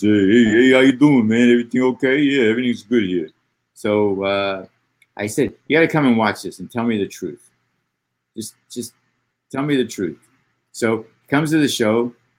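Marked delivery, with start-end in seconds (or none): 0.0-3.3 put-on raised, loud Bronx New York accent. Describing a friend of forty years, the speaker imitates Richie Gold's Bronx accent. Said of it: "He talks like this".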